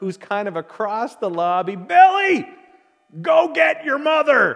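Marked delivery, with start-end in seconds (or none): 1.8-4.6 very high, very loud, shrill yell. Telling a joke where a man calls his son across a lobby: yelling across a lobby. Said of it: "he yells to his youngest son".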